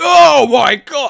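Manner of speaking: mock, very high, very loud, shrill, shocked, startled cry. Retelling putting a bag on someone's lap on a train: imitating own surprised exclamation. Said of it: "exclaim surprise".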